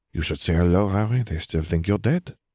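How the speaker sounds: ordinary delivery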